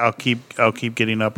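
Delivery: ordinary delivery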